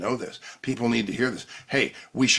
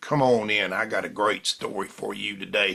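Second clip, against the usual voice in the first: put-on Alabama accent. Podcaster recommending a YouTube storyteller, quoting his opening, Lou Vickery's Alabama accent. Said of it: "he's got this Alabama accent".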